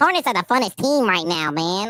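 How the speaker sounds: squeaky, high-pitched read-aloud voice. A basketball creator demonstrates reading a chat message in a high-pitched voice. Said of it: "I read everything in like a high pitched ass voice".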